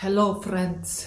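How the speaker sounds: Scandinavian-sounding accent. Greeting viewers again, imitating Scandinavian people: Scandinavian-sounding accent. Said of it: "they talk like that".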